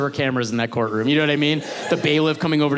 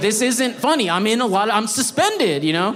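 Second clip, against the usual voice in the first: mock high voice on the edge of crying; 8 semitones higher than usual. Retelling being suspended while both parents laugh: retelling being near tears. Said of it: "I'm about to start crying".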